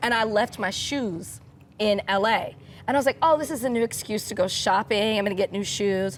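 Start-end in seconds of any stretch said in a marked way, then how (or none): none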